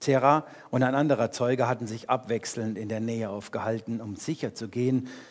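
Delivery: plain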